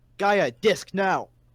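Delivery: loud, shouted, yelling voice. Calling out to gaia as the ground breaks, yelling. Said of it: "I'm gonna yell".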